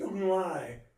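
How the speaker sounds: desperate, loud, frantic shouted scream. Retelling shouting at a running man to stop: imitating a frantic scream. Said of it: "And I screamed".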